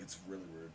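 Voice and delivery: low quiet deadpan.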